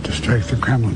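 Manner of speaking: normal talking voice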